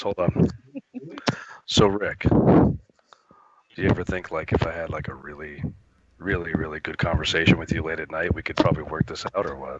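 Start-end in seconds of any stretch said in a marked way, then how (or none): 1.7-9.8 deep voice pushed down, mic up close. Getting the mic real close to ask Rick something, lowered, deeper voice. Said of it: "I have to lower my voice a couple more tones here".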